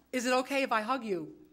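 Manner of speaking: plain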